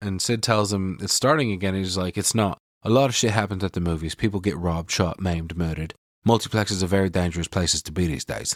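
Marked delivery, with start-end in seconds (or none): 2.2-8.6 put-on British accent, lower. Retelling a film scene where a character keeps talking: english accent. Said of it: "Randy starts talking in an English accent and will not stop".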